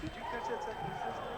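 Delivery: soft unvoiced whispered aside.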